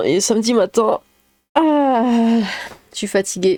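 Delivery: speech through a stretch, with a long drawn-out ah. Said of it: "je m'étire".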